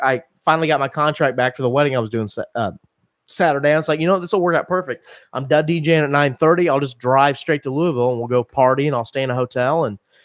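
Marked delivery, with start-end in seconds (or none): none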